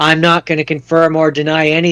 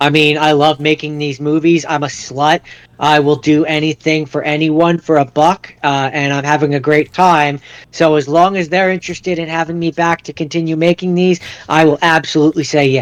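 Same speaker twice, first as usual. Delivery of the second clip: normal talking voice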